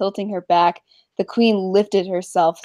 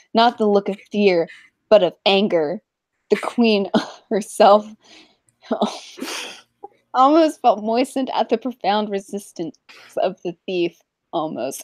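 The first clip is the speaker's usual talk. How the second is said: speaking through giggles and laughter. Reading a story aloud to listeners, laughing while reading. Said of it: "I'm laughing too hard".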